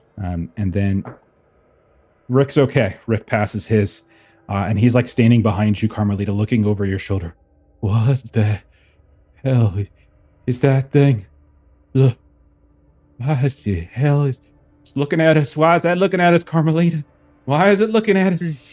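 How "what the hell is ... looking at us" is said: frantic, panicking, high-pitched voice with rising pitch. A game narrator voicing a character looking over a player's shoulder, panicking.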